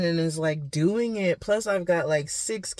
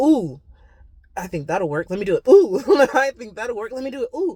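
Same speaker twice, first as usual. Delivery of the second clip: mock giddy, loud, fast, excited chatter; 4 semitones higher, 6 dB louder than usual. Retelling own habit of taking on every new idea: imitating own excited self. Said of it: "And I just get so excited".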